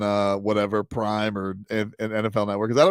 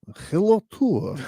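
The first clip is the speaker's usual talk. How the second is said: very high-pitched fake Russian accent; 11 semitones higher than usual. Joking about how a Russian speaker would sound: put-on Russian accent. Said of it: "Russian would be like, he'd be like".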